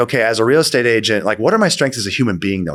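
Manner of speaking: plain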